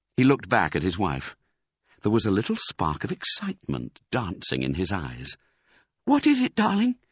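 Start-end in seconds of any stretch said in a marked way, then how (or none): 6.1-7.0 rushed and quick, very high pitch. Seeing excitement in her husband's eyes, a wife asks quickly. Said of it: "said Mrs. Fox quickly".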